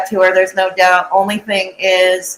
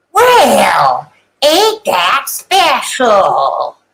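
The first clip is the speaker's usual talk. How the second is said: sing-song delivery, "well" drawn out, rest swooping; 3 semitones higher than usual. Announcing a bit to listeners, then doing a Church Lady impression. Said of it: "I'm going to do this in my best church lady".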